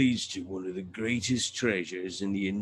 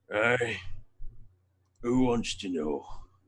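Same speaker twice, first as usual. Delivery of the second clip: heavy, thick, very growly voice. Voicing the reply heard from another cell, in a very growly voice. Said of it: "a very growly voice".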